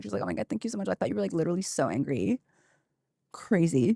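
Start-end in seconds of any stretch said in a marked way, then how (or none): 0.2-2.4 acted bubbly, giggly, squealing gush with swooping pitch. Imagining voice actors praising each other after a scene: imitating squealing, giggly gushing. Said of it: "squealed and giggled together".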